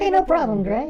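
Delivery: put-on weird, very high, mousy, girlish squeaky voice. Voicing a girl in a bit, replying to thanks: weird mousy girl voice. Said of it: "weird girl mousy voice".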